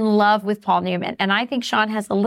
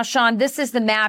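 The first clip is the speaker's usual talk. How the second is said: ordinary delivery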